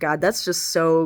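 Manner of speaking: ordinary delivery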